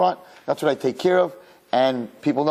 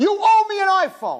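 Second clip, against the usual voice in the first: acted very high, demanding spoiled child's cry; 3 dB louder than usual. Imitating kids demanding things from their parents: imitating a kid screaming at parents. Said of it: "I've seen kids scream at their parents like that".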